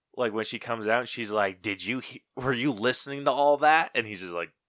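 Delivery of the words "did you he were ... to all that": mock furious yell, as if ready to explode. Retelling a movie scene where a character confronts a neighbor: imitating an angry yell. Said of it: "ready to rip Peter's head off".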